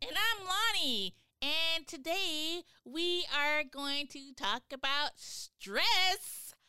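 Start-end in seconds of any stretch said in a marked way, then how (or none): 1.4-6.5 eager, thrilled, excited, high, drawn-out delivery. Host introducing the show's topic to co-hosts, excited. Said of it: "I don't know why I sounded so excited".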